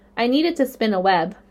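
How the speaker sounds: plain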